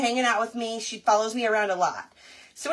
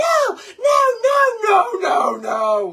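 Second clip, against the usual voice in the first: acted-out yelling, much louder, higher pitch; 7 semitones higher, 4 dB louder than usual. Retelling freaking out when she seemed about to bring them a mouse, retelling their yelling. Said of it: "I'm just yelling".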